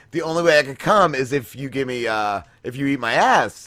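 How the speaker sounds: usual speaking voice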